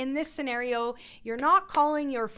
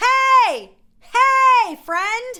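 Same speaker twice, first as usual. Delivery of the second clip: very high, very loud, long-drawn-out calling; 10 semitones higher, 13 dB louder than usual. An instructor demonstrates a vocal exercise, calling to a friend across the street. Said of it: "you're calling your friend across the street".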